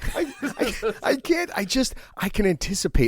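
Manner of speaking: words breaking through laughter, high and drawn out. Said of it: "Let me know when you stop laughing".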